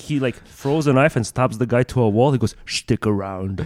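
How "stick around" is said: put-on spoken in a Scottish accent. Quoting a movie line, sounding like Sean Connery. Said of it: "You sound like Sean Connery there".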